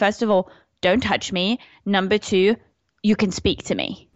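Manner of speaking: ordinary talk, nothing marked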